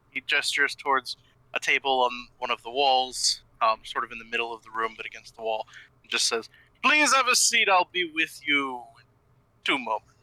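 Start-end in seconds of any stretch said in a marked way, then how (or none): 6.9-10.0 big, booming voice with swooping pitch. Voicing a grinning creature greeting small travellers: booming voice. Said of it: "booms out again".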